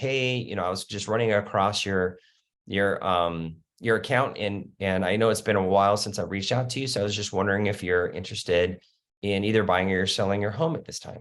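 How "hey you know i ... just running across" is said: plain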